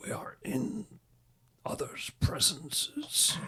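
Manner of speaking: hushed whisper. Game master voicing a rattling skull staff speaking to a player character, whispered. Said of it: "you're going to hear whispered".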